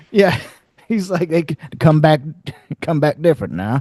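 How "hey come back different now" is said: put-on creepy, weird voice, higher. Describing the sheriff helping the vampires, imitating the sheriff's creepy voice. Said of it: "He's got like a weird".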